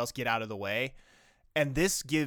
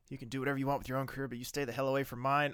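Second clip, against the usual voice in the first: fast, panicky, tumbling delivery; 4 dB quieter than usual. Retelling a character's line from a scene just watched: imitating a panicked voice. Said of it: "the panic in her voice".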